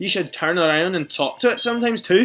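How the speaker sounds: put-on high, loud Scottish-accented voice. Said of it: "I went Scottish with it".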